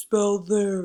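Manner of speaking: big giant voice. Leading a spelling drill, calling out the word in a big giant voice. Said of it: "In a big giant voice".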